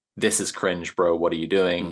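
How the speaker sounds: ordinary talk, nothing marked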